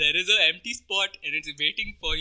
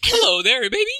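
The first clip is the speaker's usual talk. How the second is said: very high, loud, squeaky fake woman's voice; 9 semitones higher, 7 dB louder than usual. Asked to do an accent, a speaker tries a put-on female voice. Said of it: "You sound like Mickey Mouse".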